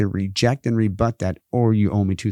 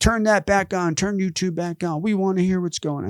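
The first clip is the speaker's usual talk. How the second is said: mock very high-pitched, demanding shout; 10 semitones higher than usual. Retelling how someone in the meeting demanded the stream be restored: imitating someone yelling. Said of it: "somebody was yelling".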